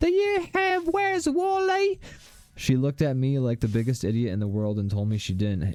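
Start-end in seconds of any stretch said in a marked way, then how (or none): 0.0-2.0 put-on very high, slow little-kid Australian accent. Recalling asking a Borders cashier for a book as a child: little kid Aussie accent. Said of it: "in my little kid Aussie accented voice".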